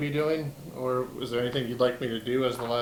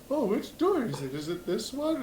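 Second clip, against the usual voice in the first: very high, swooping, mopey delivery; 9 semitones higher than usual. A player pictures Winslow wandering the ship, doing a mopey Winslow impression. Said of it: "Winslow's just like moping around the ship".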